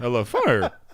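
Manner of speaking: voice breaking and cracking mid-line. Retelling how the other speaker just said it: imitating a cracking voice. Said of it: "as his voice cracks".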